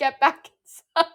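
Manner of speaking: acted panicked freaking out. Retelling a character yelling at his brother: retelling a character freaking out. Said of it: "freaking out at his brother".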